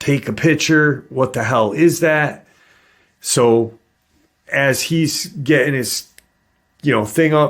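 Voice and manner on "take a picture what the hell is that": urgent, startled scream. Retelling the passenger yelling at the driver: retelling a scream.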